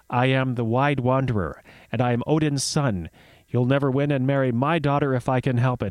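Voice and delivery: ordinary talk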